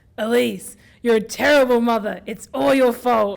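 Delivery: menacing, sinister monster-like voice. Narrator voicing a sinister voice speaking to a woman, sinister monster-like voice. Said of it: "Voice changes to a sinister, mon- monster-like effect".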